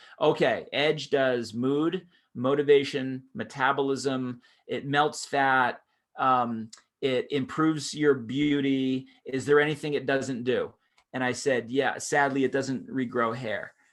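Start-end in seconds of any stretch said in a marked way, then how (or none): none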